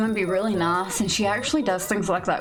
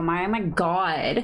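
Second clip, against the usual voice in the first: put-on Valley Girl accent, vowels stretched, slow. Showing off a voice after announcing it: Valley Girl accent. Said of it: "Valley Girl".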